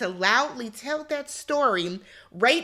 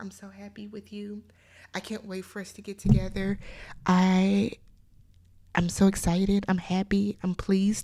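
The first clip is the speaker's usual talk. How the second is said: mock flat monotone delivery; 4 semitones lower than usual. Mocking how two people told each other they were happy: flat monotone voice. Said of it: "it's just very monotone".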